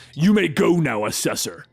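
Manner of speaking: ordinary delivery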